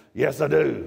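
put-on low, gruff voice. Retelling what the land's owner answered at his door: imitating a gruff voice. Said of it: "He had a gruff voice".

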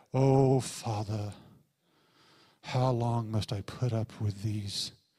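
put-on sad, solemn, very low, deep British accent. Complaining about portrayals of Jesus, imitating a solemn, sad Jesus. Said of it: "He just walks around like this".

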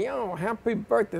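put-on soft, casual New York Brooklyn accent. Retelling a guy from New York greeting him on the street, Brooklyn accent. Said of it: "Like that Brooklyn accent".

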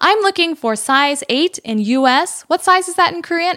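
firm, blunt, no-nonsense voice. Retelling a kyopo girl who came in speaking English, imitating a firm, blunt demand. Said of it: "she says in English very firmly".

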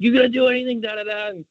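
put-on, shrill, very high screaming. Retelling a moment in a stall, the speaker is imitating Keenan screaming at Max. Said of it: "like just screaming".

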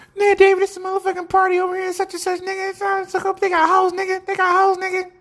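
very high, squeaky voice. Retelling a party invitation, imitating John's high voice. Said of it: "John had a high-ass voice".

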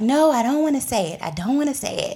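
tearful, about-to-cry pleading voice. Retelling what a woman said when asked why she was crying, imitating someone tearing up. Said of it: "she starts like tearing up".

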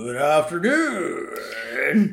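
disguised voice with swooping, swinging pitch. Retelling a scene where Bart walks past and disguises his voice: Bart's disguised voice. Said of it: "Bart tries to disguise his voice".

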